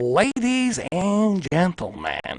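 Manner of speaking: jumpy voice with unpredictable up-and-down pitch. Showing how the Joker actually sounds: Joker voice. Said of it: "that's how Joker sounds".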